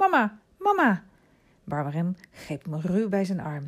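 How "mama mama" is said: very high-pitched, wild crying out. Narrator reading Remy calling for his mother; crying out. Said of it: "Verwilderd keek Remy om zich heen en riep".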